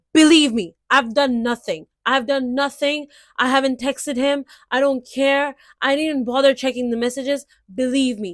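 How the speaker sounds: mock yelling, protesting tone. Acting out a friend falsely accused of texting: mock yelling in protest. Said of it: "I'm gonna start yelling".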